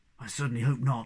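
hushed whisper. Snufkin whispers back to Moomin Troll, whispered back. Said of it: "Snufkin whispered back".

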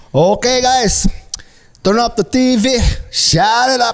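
put-on Filipino accent mixed with American. Imitating a friend's dad talking to the kids, in a hybrid Filipino-American accent. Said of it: "hybrid Filipino accent that was mixed with an American accent".

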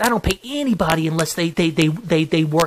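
ordinary talk, nothing marked

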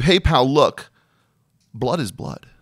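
mock fed-up doctor voice, dismissive and exasperated. Acting out a doctor answering a patient's question: eye-rolling dismissive doctor. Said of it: "he rolls his eyes".

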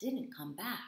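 ordinary delivery, nothing marked

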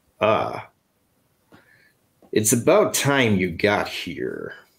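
put-on American accent with swooping, animated pitch. Bruised, with his arm in a sling, he turns to the three of you: Doctor Strange voice. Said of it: "says in that famous Doctor Strange voice".

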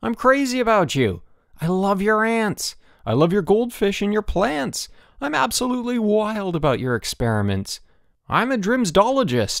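very high exclaiming cry. Bruno answers Elmer, who thinks Bruno hates him: crying out. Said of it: "Bruno cried".

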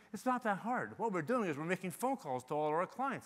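normal talking voice

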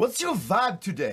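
put-on hammed-up, high-pitched, slow South African accent.

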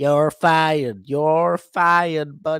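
high, loud shout. Joking about what Trump would do, imitating Trump saying you're fired. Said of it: "The only thing he's gonna do is fire your ass".

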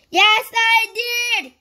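very loud, high, full-volume storybook shout. A man answers another man's question: shouting at the top of his voice. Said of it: "shouted Mr. Noisy at the very top of his voice".

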